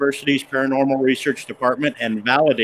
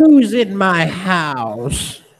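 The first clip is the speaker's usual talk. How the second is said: put-on high, raspy, gravelly old woman voice, "house" stretched; 6 semitones higher, 4 dB louder than usual. Retelling a voice heard during a house investigation: gravelly old woman's voice. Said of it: "the gravelly old woman's voice goes".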